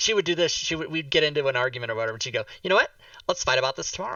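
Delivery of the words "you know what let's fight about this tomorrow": put-on valley girl manner of talking. Retelling what an older girlfriend said during arguments: imitating Jennifer's valley girl voice. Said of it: "she talked like a valley girl".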